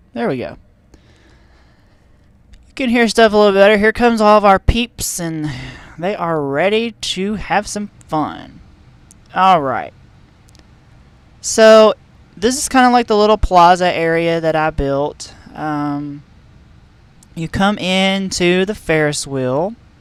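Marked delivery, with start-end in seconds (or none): 2.7-5.2 louder, higher, faster raised voice. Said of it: "I'll speak up a little bit louder".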